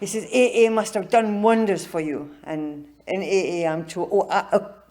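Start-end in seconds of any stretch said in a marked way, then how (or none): 0.2-2.3 put-on cultured, refined Jamaican accent. Retelling what a man said to the speaker about aa, cultured jamaican accent. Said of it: "his cultured Jamaican accent".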